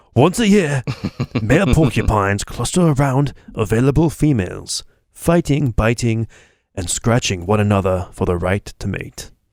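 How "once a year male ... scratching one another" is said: wildlife documentary narrator voice, narrating style. Reading a porcupine fact aloud in a David Attenborough voice. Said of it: "I gotta read this in a David Attenborough voice".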